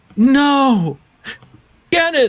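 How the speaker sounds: high, loud, panicked yell. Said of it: "she yells out".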